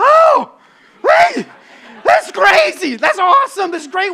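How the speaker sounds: loud, drawn-out, relieved and amazed exclamation. Retelling the moment the parachute opened: imitating relieved exclamation. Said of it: "relief hits".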